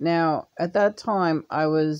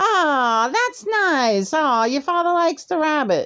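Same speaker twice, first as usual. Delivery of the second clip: put-on, sugary, all-smiles, very high cheerful voice; 11 semitones higher, 4 dB louder than usual. Recounting the mother's reaction to the father liking the rabbit, imitating her sweet cheerful tone. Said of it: "my mother is like all smiles".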